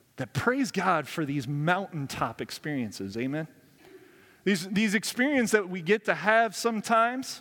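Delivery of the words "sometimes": heavy emphasis on the word "sometimes". Preaching about mountaintop experiences with god: stress on sometimes. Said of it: "emphasis on the word sometimes".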